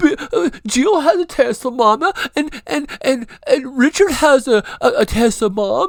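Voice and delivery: put-on very high, loud, crying child's whine. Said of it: "she's cried because".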